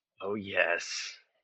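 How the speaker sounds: metallic, echoing voice. Voicing a character speaking inside closed armor: metallic echoing voice. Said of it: "metallic echoing s-, echoing voice".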